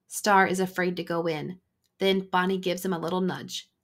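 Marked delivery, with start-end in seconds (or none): none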